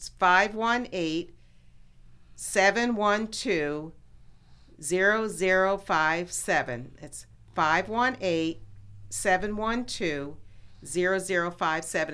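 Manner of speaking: very slow, spaced-out delivery.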